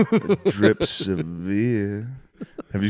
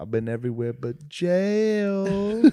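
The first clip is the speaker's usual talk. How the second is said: very high, very slow New York drawl, jail stretched out; 9 semitones higher, 4 dB quieter than usual. Retelling a funny video clip, imitating Big Homie Buzzo's New York slang. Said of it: "they just both have New York slang".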